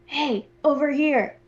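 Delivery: whispering. Calling the dwarves over while disguised as Corkstrahd: whisper. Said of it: "I'm gonna whisper and just say".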